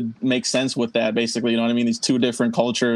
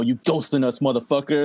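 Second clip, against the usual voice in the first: put-on menacing, threatening voice. Retelling a film scene where Bill Duke checks a teammate: imitating Bill Duke's menacing threat. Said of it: "that was some menacing threat right there".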